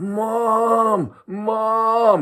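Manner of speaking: mock very high, drawn-out sobbing cry. Recounting the sound he made walking home, imitating crying yells for help. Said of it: "he's like crying and kind of yelling for help".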